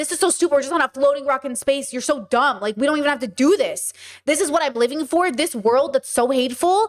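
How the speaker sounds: acted angry tone. Retelling past thoughts about a hateful world: retelling own angry thoughts. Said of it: "my anger was like".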